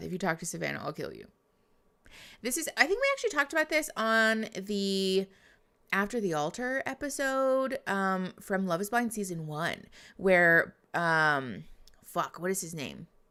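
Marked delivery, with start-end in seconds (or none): 0.0-1.3 put-on whisper under breath, quieter. Retelling what one partner said to the other: imitating Francesca whispering under breath. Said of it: "Francesca just whispers under her breath".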